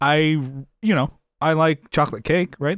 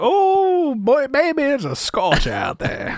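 fake, crappy Southern accent, very high and swooping; 11 semitones higher than usual. Describing coming inside from the heat, the speaker does a crappy southern accent. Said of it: "making up a really crappy Southern accent".

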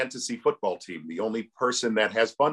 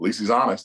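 ordinary delivery

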